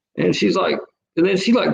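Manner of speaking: usual speaking voice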